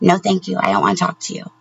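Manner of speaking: polite and respectful manner. Retelling turning down a woman at a bar, retelling a polite refusal.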